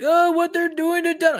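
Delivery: play-acted very high-pitched tearful crying. Describing a clip to someone who has seen it, imitating a crying woman. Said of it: "that woman that was crying".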